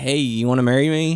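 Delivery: ordinary delivery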